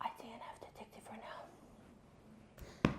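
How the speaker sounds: breathy, hushed, very quiet whisper. Admitting an unpopular opinion about a tv show: whispered. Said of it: "I'm gonna whisper it".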